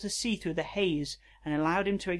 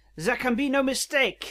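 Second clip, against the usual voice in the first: put-on Belgian accent, higher and louder; 8 semitones higher, 6 dB louder than usual. Reading a robot cat's lines in a story aloud: Poirot voice. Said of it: "I want him to sound like Poirot".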